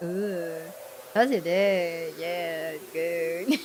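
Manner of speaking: put-on tipsy, slurred voice like a movie drunk.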